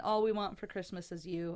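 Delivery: plain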